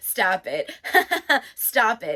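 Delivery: laughter building into panicked, laughing pleading. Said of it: "progressively panics and laughs".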